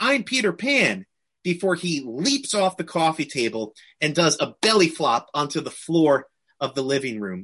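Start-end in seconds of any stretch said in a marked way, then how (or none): 0.0-1.0 mock, high, very confident, sure-of-himself kid voice. Retelling the youngest kid in costume standing on a coffee table: mock-confident declaration. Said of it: "in a very confident, very assured voice declares".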